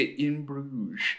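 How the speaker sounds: "In Bruges" said with a little lilting tune. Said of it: "I have to say it with some, like, lilt".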